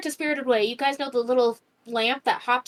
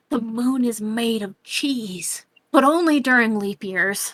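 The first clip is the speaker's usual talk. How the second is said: put-on whisper. Telling how he bends over by the street lamp, retelling his whisper in your ear. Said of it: "he whispers in your ear".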